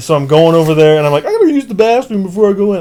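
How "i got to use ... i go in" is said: odd, high, third-person talking-to-oneself voice. Retelling talking to oneself before using the bathroom: high-pitched third-person voice. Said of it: "talk to myself like in a third person voice, and it's just really high".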